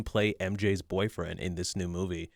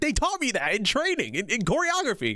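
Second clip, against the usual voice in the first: put-on excited outburst, higher pitch; 14 semitones higher, 3 dB louder than usual. Retelling an actor's reaction to a lightsaber move: imitating someone getting excited. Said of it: "he got really excited".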